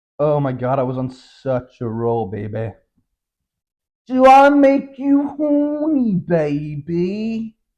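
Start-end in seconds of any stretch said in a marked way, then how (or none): 4.1-7.5 clumsy, very high, very slow, drawn-out put-on drawl. Trying out a quote impression that isn't very good: bad Austin Powers impression. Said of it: "that wasn't very good".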